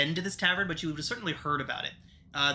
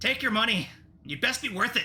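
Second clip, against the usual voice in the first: grudging, pitched-up words forced through clenched teeth; 7 semitones higher than usual. Narrating Drummond as he hands over the coins, speaking through gritted teeth. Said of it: "he speaks through gritted teeth".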